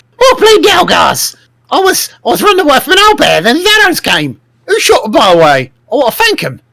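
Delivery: very high, swooping goblin character voice. A player speaks as their goblin character during a game, in a goblin voice. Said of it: "So in your goblin voice".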